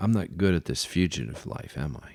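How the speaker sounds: put-on choked-up voice. Retelling what he asked after he choked and coughed, imitating a choked-up voice. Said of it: "But he choked, and he coughed".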